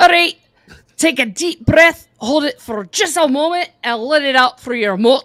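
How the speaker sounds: booming, loud, slow put-on Scottish accent. Saying a requested line in a Scottish accent. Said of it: "one more time".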